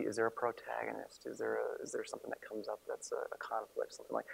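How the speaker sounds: speaking in a whisper. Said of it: "I'm whispering and I have this lav mic".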